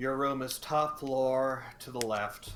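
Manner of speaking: extremely bored, flat deadpan delivery. Narrating a character handing the player a room key, in a bored deadpan voice. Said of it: "in the most bored, deadpan voice you have ever heard".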